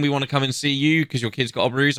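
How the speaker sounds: plain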